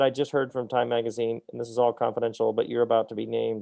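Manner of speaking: usual speaking voice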